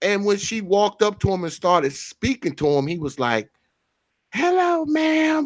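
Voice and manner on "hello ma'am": man's put-on little-girl voice, higher. Retelling how a huge store worker greeted his wife: imitating a man sounding like a twelve-year-old girl. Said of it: "he sounded like a twelve-year-old girl".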